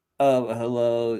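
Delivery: thick, stuffed-up, congested nasal voice. Mocking how Chris talks: nasal imitation of Chris. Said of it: "so I've noticed it's the real nasally".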